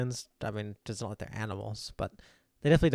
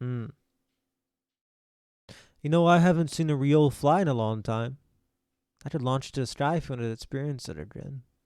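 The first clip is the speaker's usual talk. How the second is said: giant character voice; 3 semitones higher, 3 dB louder than usual. Voicing a giant bending down to the players: voicing a giant. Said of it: "he kinda looks over you and he bends down".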